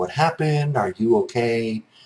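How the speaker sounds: mock steady, very calm, reassuring and supportive. Retelling own reply on the phone: imitating own calm, supportive tone. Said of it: "trying to be very calm and supportive".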